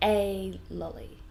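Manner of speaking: article a stressed, loud, drawn out, said ay. Example of a parent stressing it's only one: louder, longer a. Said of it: "we also say it louder and longer".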